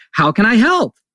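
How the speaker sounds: sunny, cheerful cartoon voice, bright and rising. Speaker acting out his own cheerful greeting: put-on cheerful Disney-character voice. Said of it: "in a cheerful voice, as my voice goes up, like I'm a Disney character".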